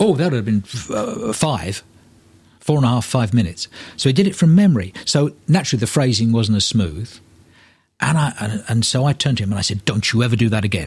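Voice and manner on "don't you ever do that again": put-on furious, scolding tone. Retelling scolding a colleague who did the monologue from memory: imitating own furious rebuke. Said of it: "I was furious".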